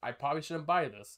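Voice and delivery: plain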